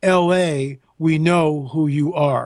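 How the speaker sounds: deep gravelly voice, very slow. Retelling what a kid on a docked boat said, in a deep gravelly voice. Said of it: "just said in a deep gravel voice".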